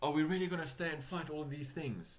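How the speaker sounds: calling out with the voice up high. Game master voicing a player's character during a fight, shouting. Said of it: "So as you shout".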